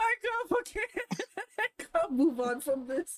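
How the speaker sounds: high-pitched laughter breaking through the words. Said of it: "It hit a funny bone".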